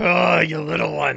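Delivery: growly monster orc voice. Voicing an orc sneering at a small fighter: orc voice. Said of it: "the orc is looking at him like".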